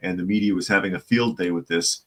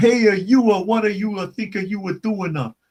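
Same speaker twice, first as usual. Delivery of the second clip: very high, exaggerated fake Italian accent, "uh" after every word; 13 semitones higher, 4 dB louder than usual. Showing how Ernest Borgnine did Italian: Ernest Borgnine mock Italian accent. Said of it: "Ernest Borgnine doing Italian, all he has to do is put a on the end of everything he says".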